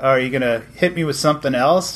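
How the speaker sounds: normal talking voice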